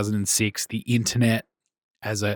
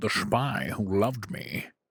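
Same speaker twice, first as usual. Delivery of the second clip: quiet, soft Scottish accent; 7 dB quieter than usual. Asked to read each title in a different Bond's accent, speaker does Sean Connery impression. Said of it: "Sean Connery".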